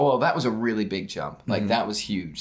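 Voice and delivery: normal talking voice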